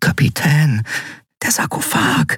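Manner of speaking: high, hushed whisper under the breath. Narrator reads a character addressing the captain; whispered. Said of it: "flüsterte Miko".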